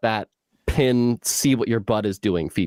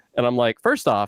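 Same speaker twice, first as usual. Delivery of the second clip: normal talking voice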